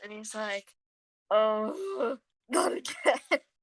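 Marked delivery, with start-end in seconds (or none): 1.3-3.4 tired, weary grumble sighed out. Voicing a character stomping cigarettes again: weary sighing. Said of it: "Leon sighs".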